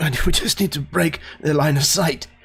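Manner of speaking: put-on older-sounding voice. Narrating a game and voicing the professor, in Professor Fox's older voice. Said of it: "kind of with his somewhat older voice".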